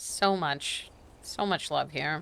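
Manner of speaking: very slow, drawn-out sarcastic delivery. Replying to a partner after a joke that fell flat: sarcastic. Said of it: "That sounds sarcastic".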